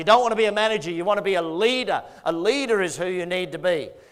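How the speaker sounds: ordinary delivery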